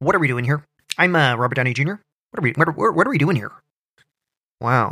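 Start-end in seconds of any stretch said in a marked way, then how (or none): 0.0-3.5 clumsy stumbling acting voice. Retelling a tense interview moment: bad Robert Downey Jr. impression. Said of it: "that was a bad impression".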